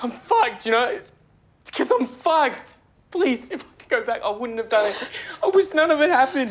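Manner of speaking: crying while pleading. Begging another speaker who accuses them over a needle: crying while pleading. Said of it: "stop crying".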